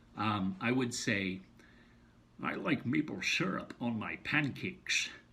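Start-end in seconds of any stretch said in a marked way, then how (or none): 2.5-5.1 put-on voice with slurred s sounds. Showing a practice sentence used to learn a voice: Sean Connery impression. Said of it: "Sean Connery's voice".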